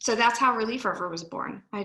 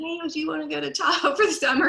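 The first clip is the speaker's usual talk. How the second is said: high-pitched, loud shouting as if to far distance; 7 semitones higher, 4 dB louder than usual. Retelling calling out to a husband about summer in Tahoe: imitating own past shout. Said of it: "So I shouted, screamed to my husband".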